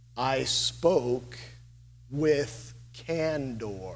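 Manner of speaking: put-on very slow, drawn-out old Virginia drawl. Retelling what an interim president told him: imitating slow old Virginia accent. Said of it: "he speaks very slowly in an old, old Virginia accent".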